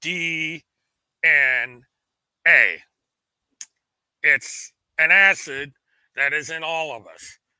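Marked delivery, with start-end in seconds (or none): 0.0-2.8 slow, deliberately paced, spelled out letter by letter. Speaker spells an acronym so the task force gets it: 'D N A' spelled out slowly. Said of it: "I'm going to say this slowly so that task force gets it".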